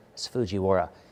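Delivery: soft, hushed half-whisper under the breath. Retelling half-whispering to his son during a movie: retelling own half-whisper. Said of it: "I whispered over to my son".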